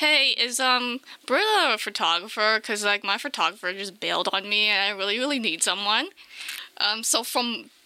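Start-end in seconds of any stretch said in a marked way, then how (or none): none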